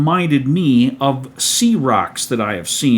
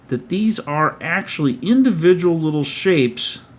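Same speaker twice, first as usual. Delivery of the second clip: ordinary talk, nothing marked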